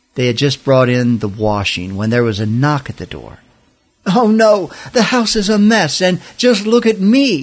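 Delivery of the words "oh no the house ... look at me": high-pitched storybook-style exclaiming. Martha reacts to a knock at the door, exclaiming. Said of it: "exclaimed Martha".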